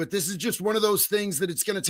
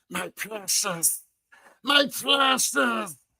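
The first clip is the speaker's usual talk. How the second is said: unsettling, doting, eerie, very slow and drawn out; 3 semitones higher than usual. Retelling how someone petted a rifle while speaking, imitating Gollum voice. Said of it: "He was petting one of his rifles and going".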